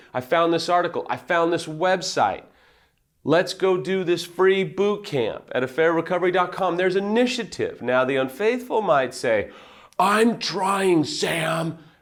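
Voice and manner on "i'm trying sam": put-on angry, exasperated voice. Acting out what an unfaithful partner might say, in a mock-angry voice. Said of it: "that's the angry, unfaithful voice".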